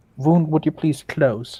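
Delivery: quiet whispering. A player heals their own character and addresses the wound, whispering to self. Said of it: "I'm just whispering myself like".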